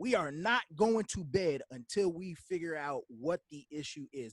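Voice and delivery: ordinary talk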